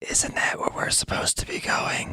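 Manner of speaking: soft whisper under the breath. Leaning over to another character in the scene: whispering. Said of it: "lean over towards Ambionitis and just whisper".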